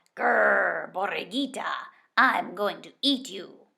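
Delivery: creaky, rough, snarling coyote voice with a long grrr. Reading a story where a coyote comes upon the lamb borriquita: growling coyote voice. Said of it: "The coyote growled".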